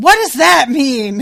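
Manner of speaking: loud, high, slow yell.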